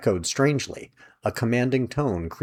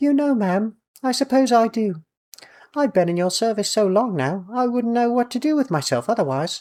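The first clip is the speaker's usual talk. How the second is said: put-on very high-pitched, clipped, proper British accent; 13 semitones higher, 3 dB louder than usual. A narrator voices a mouse replying to a lady's offer, in a very high-pitched clipped British accent. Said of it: "very high-pitched, but the response came out in a similar clipped proper British accent".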